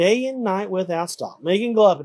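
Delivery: plain reading voice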